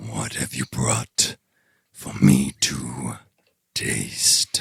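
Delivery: very deep, low, looming dragon beast voice. Voicing a dragon speaking into the players' minds: dragon voice. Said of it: "You hear its words in your head".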